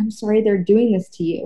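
whispered. Retelling what was said to a date: retelling a whisper. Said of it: "I whispered that".

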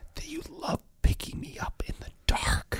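put-on soft, breathy child's whisper. Retelling how a son whispered a reminder to his father: imitating a child whispering. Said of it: "whisper to me".

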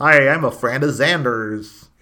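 put-on loud slow American accent. Imitating an actor doing an American accent on Buffy: James Marsters doing an American accent. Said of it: "James Marsters on Buffy do an American accent".

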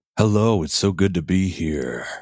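put-on buttery smooth, buttered-up tone. Greeting the hosts on arrival: put-on buttery voice. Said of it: "I tried doing a little bit of the, the, the buttering of the voice".

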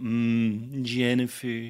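long, drawn-out mmm before the next word. Imitating own earlier line on seeing a pretty girl: Homer Simpson-style "mmm". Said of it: "You're Homer Simpson?".

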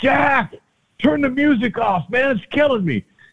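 very high, loud yell, called out. Retelling calling to a teammate across the field: retelling a yell. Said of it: "I'd yell across the diamond".

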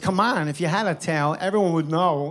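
ordinary talk

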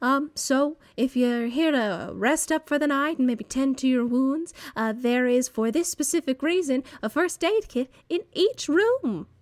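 put-on small, high-pitched elderly woman voice. Voicing an old woman who greets travelers at an inn: voicing an old woman innkeeper. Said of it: "a very small, old human woman ... And she says".

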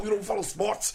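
shrill, very loud, high New York hip-hop-style outburst. Imitating another speaker going off about sports: imitating a friend going off, new york style. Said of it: "your impression of me look like someone from Wu-Tang".

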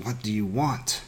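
mumbled through gritted teeth. In pain from digging claws, the narrator asks the bunny creature, mumbled through gritted teeth. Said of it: "Through gritted teeth, I managed to mumble".

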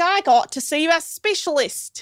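put-on Australian accent, high, slow, drawn out. Retelling a person's reaction to being sent to a specialist, doing a put-on australian accent. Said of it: "Okay, he's not Australian".

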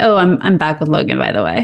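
breezy, casual, offhand and nonchalant. Retelling a line told to Lorelai: imitating a nonchalant remark. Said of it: "chalantly tells Lorelai".

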